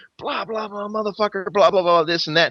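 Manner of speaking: loud scream. Retelling a fight as the cops come in: imitating someone screaming. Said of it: "he's screaming".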